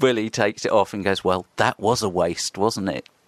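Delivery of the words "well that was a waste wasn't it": mock dismissive tone, slower. Retelling how a teacher, Mr. Willy, reacted afterwards, imitating Mr. Willy's dismissive teacher tone. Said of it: "used the teacher tone to discount it".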